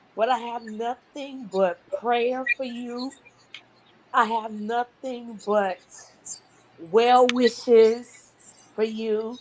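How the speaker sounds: tearful, speaking through tears. Speaking to someone who never gave up, the speaker is in tears: tearful. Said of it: "I'm in tears right now".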